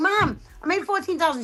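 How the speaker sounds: put-on loud call, high-pitched. Retelling calling out to Mom, who can't hear: yelling in to Mom. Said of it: "I yelled in".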